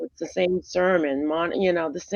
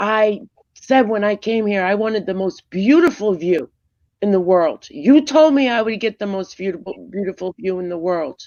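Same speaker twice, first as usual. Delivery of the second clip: loud, furious, very angry yell; 2 semitones higher, 5 dB louder than usual. Telling a story, acting out a man yelling at the concierge: retelling an angry yell. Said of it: "yelling, very angry".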